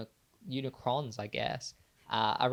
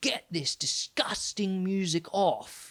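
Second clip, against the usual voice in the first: put-on British accent, higher; 7 semitones higher, 3 dB louder than usual. Asked for a better impression, imitating Lucifer: Lucifer impression. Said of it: "Can you do a better one?".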